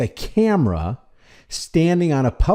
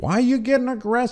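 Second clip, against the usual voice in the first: high, fast, mocking cop voice. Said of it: "This cop is saying".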